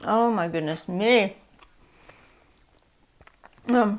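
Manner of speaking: speaking through a mouthful. Taking a bite while tasting a treat, talking with mouth full. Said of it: "try not to speak with my mouth full".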